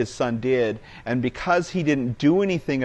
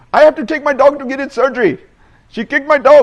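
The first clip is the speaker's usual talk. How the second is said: furious shouting, very high, very loud, shrill, aggressive; 13 semitones higher, 11 dB louder than usual. Recounting a wrong-number caller who yelled at the speaker, retelling an aggressive yell. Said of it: "Indian guy, very aggressively yell at me".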